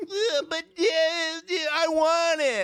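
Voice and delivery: put-on whiny little boy voice, very high and slow. Retelling how Charlie talks through the movie: imitating a whiny boy. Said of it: "Your tone of your voice drives me nuts".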